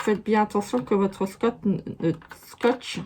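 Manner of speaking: tongue-tied, stumbling restart on scotch. Explaining a taping step to viewers, stumbling over words. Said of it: "Je bafouille".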